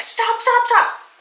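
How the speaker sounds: put-on shrill, very high-pitched shrieking scream. Retelling a boating mishap, imitating a woman screaming at him. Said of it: "she's screaming like".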